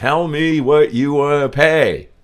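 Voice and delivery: very loud, high-pitched shout. Retelling asking someone refusing a bill what they'll pay: imitating own shouting over music. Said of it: "I'm shouting again over the music".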